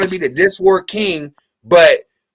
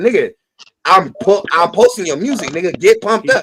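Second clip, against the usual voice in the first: ordinary talk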